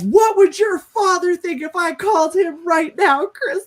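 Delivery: mock, very high, shrieking, screaming scold. Retelling how mom scolded a teenage couple at the door: imitating mom screaming. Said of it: "screaming at them about".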